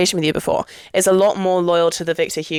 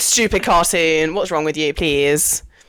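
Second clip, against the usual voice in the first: plain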